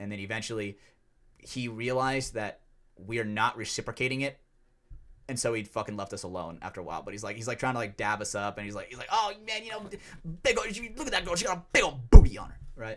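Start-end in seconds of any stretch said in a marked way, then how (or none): 9.1-12.6 frenzied, rabid, very high, very loud shrill yell. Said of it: "going fucking rabid out over every woman".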